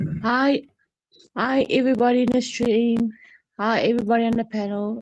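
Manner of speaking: blocked-nose voice, a bit funny. Greeting the stream and panel with tissue in the nose: sounding funny from tissue in nose. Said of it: "so I sound a bit funny because I got a little bit of tissue in my nose".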